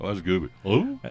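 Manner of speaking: medium-grade put-on goofy cartoon voice. Taking turns doing Disney character voices, Goofy voice. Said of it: "medium grade goofy".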